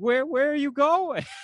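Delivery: mock weepy, high, tearful crying plea. Retelling a woman chasing after a departing man, imitating a woman crying. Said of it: "she comes out after him, crying, like".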